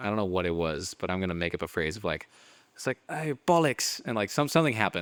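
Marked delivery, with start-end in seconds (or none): 3.1-4.0 put-on British accent, pitched up. Speaker who loves doing accents makes up a phrase, in a British accent. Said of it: "especially the British accent".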